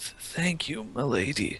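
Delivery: feeble, very soft, weak voice. Narrating a scene to players, voicing a character heard nearby, weak voice. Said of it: "you hear kind of a weak".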